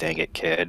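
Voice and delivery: quiet mutter under breath. Voicing a character as a child runs off: muttered under breath. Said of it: "Under my breath".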